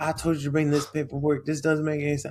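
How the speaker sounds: put-on yelling. Retelling how a recruiter yelled about paperwork: imitating a recruiter yelling. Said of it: "starts yelling at me".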